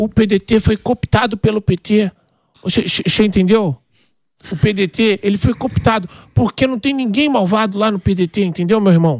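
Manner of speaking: thin, thinned-out, high-pitched put-on voice. Imitating a man whose rhetoric seems childish, in a higher, thinner voice. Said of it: "É que eu fiz a voz mais fina".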